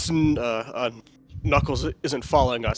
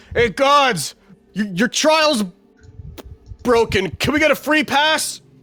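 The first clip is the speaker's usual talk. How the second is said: very high, raised calling voice projected upward; 10 semitones higher, 6 dB louder than usual. Validus looks up at the ceiling and calls to the gods in a raised voice, not shouting. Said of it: "not loudly shouts, but like raises his voice".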